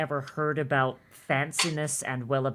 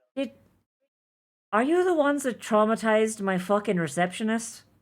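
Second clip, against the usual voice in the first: bewildered, confused halfling voice, pitched up; 6 semitones higher, 3 dB louder than usual. Voicing a confused halfling behind the desk: confused halfling voice. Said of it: "he seems very confused, and he goes".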